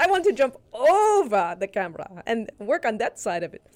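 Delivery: put-on German accent, overly drawn out. You quote a German film star who wanted to change sides, imitating her German accent. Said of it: "she said in her German accent".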